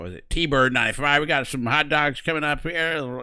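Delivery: exaggerated American drawl, loud and high. Imitating an online flight-sim player's put-on voice: Darren's exaggerated American drawl. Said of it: "an even more American accent".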